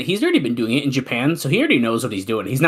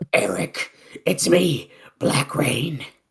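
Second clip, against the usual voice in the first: put-on strained voice; 2 semitones higher than usual. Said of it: "I can't do that voice. Oh, it hurts".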